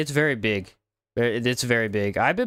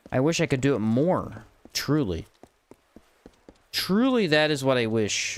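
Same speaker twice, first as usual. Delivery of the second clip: sincere-sounding but heavily sarcastic tone. Complaining about backtracking to find a lever in a game: sarcastic. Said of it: "Can you tell I'm being sarcastic?".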